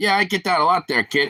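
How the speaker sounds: butch, tough New York accent. Imagining how a man would answer, speaker tries out a New Yorker accent. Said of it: "like some New Yorker accent".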